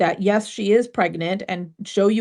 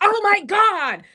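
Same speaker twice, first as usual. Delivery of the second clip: acted scream, higher pitched; 12 semitones higher than usual. Retelling listening alone in the backyard: retelling own screaming.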